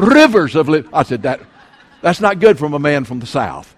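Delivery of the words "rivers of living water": loud, put-on English accent, preacher-style delivery. A preacher recalls copying a taped preacher's sermons, imitating an English accent. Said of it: "I used to preach that way".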